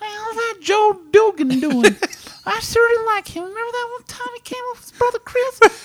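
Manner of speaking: very high voice, pitched way up. Imitating the wife's mom asking about Joe: like Mister Hanky. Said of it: "Nicole's mom sounds like Mister Hanky".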